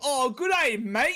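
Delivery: bad fake Australian accent. Trying to sound British, the speaker attempts an accent: bad Australian accent. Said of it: "was trying to sound British".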